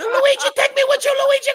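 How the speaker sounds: desperate wailing shriek, very high, shrill and very loud. Retelling a grandmother at a funeral: imitating grandma screaming. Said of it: "She's screaming in Italian".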